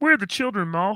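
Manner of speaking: nasal, puppet-like voice. Playing a scene opposite Maul, speaking in a Kermit the Frog voice. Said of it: "I'm doing Safe the Kermit the Frog".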